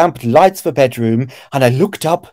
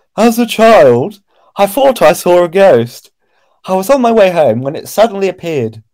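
put-on middle-class woman's accent; 4 semitones higher than usual. Reading a woman's own account aloud to a listener, middle-class woman's accent. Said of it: "I'll try and do a different woman's accent".

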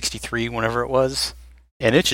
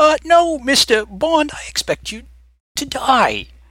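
slow, drawn-out, high-pitched, swooping delivery; 4 dB louder than usual. Acting out a famous Bond movie line: Christopher Walken delivery. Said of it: "And you give the Walken delivery".

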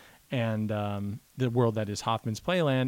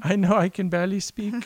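put-on high, raised little baby voice; 7 semitones higher, 5 dB louder than usual. Pretending to be the infant son, who can barely speak: imitating infant son. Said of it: "He was like".

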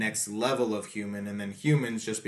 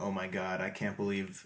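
mock crying, quieter; 2 semitones lower, 4 dB quieter than usual. Retelling how a father reacts on finding his son: imitating a character crying. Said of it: "He just starts crying and is like".

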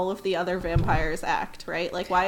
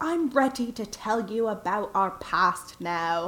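slow, mysterious put-on delivery. Retelling a character's announcement about the past: imitating a mysterious tone.

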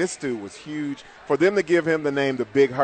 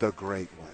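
lowered, very soft, hushed voice; 6 semitones lower, 11 dB quieter than usual. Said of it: "You gotta lower your voice and say".

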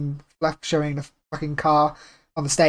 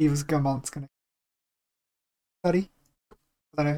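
clumsy put-on French accent, very slow; 4 dB quieter than usual. Chatting about a Ubisoft event, quoting someone: bad French accent. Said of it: "That was a bad accent. It's meant to be French".

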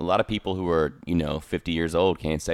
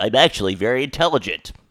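teasing, mocking parody delivery; 5 semitones higher, 6 dB louder than usual. Retelling how the other speaker answered being called dumb, imitating a friend. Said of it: "and you're like".

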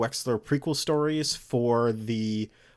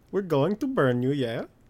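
clumsy, bad fake Norwegian accent; 3 semitones higher than usual. Suggesting a character should sound Norwegian, speaker tries it: bad Norwegian accent. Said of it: "No, oh my god, no, please stop".

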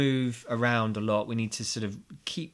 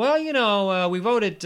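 put-on American accent, raised and higher; 9 semitones higher, 7 dB louder than usual. Voicing what some people genuinely think; American accent. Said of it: "I don't know why I'm doing an American accent".

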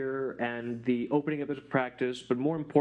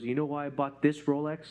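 put-on whispered delivery. Retelling a dad leaning in close with a question: imitating a whisper. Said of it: "we're whispering".

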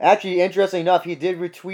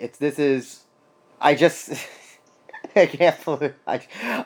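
slow, halting, laughing through words, disbelieving; 3 semitones lower than usual. Reacting in disbelief, still lost for words, laughing while talking. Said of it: "I'm laughing right now".

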